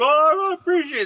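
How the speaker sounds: mock, very high, all-mushy gushing voice. Retelling a friend's reply about his new girlfriend, imitating him getting emotional. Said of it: "he got all mushy on me".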